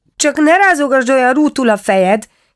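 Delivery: very high, anxious outcry. A little boy cries out anxiously at someone squeezing the cabbages in the basket. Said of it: "kiáltotta a fiúcska szorongva".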